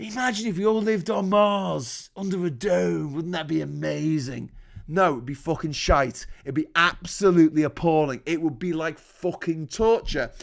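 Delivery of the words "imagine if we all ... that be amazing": acted, spaced-out stoned musing, "Mars" drawn out. Retelling what a stoned partygoer says at parties: imitating a stoned partygoer. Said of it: "he's off his head on fucking cannabis".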